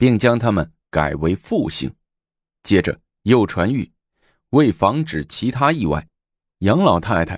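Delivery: ordinary delivery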